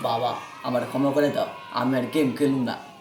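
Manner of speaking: low, soft, begging, pleading tone.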